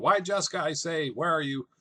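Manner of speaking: high hollering yell. Retelling a scene where Shylock yells for Jessica: imitating Shylock yelling. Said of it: "when Shylock yells for Jessica".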